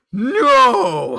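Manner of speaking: mock outraged bark, very high and very loud. Retelling clicking a game and hearing John react, imitating John's angry shout. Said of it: "He was so fucking mad".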